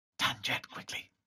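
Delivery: hushed, breathy, soft calling whisper. Narrating a story, the speaker voices a woman calling someone by name: whispering. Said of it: "Then she whispers".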